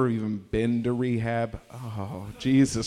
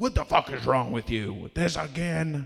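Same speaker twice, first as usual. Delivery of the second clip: mock-angry scolding, higher pitch; 3 semitones higher than usual. Speaker retells their mom scolding a drunk brother, imitating an angry scolding. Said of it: "push him around and be like".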